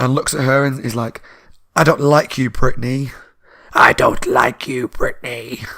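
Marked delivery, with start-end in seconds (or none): 3.7-5.6 terrible, slow ventriloquist dummy voice. Retelling a scene where a moving dummy speaks to brittany, terrible dummy impression. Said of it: "I might do terrible impressions".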